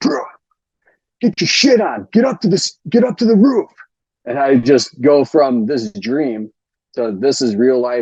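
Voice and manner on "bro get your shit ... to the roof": high, loud shouting. Retelling how the squad leader burst in shouting at him; retelling a shout. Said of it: "And he shouts at me".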